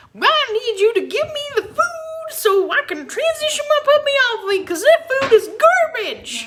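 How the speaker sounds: very high, squeaky cartoon voice, pitch swinging wildly. Asked to redo the impression of ticking off a breeder, Mickey Mouse-like squeaky voice. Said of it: "That was like Mickey Mouse Goes West".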